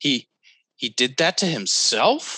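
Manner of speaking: rising uptalk intonation on the word himself. Describing clunky delivery that went up at the end: rising at the end like a question. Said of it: "it went up at the end. It's known as up talk. It's when you turn a statement into a question".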